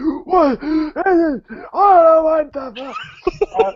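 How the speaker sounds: high, crying wail of a dying creature. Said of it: "He's just like".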